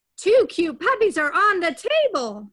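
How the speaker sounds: upset, loud, high exclamation. Showing listeners how to read a sentence with an exclamation mark, reading with an exclamation. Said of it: "And I would read it like this".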